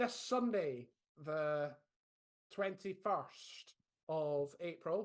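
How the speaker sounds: very slow, robotic machine-announcement delivery. Speaker announcing a sign-up deadline to listeners, sounding like an automated robot. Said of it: "I sounded like an automated robot there".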